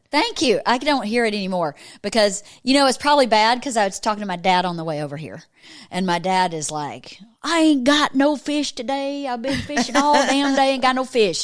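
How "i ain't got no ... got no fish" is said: put-on Southern drawl, pitched higher. Retelling a phone call with dad: imitating dad's Georgia accent. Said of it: "he talks like that".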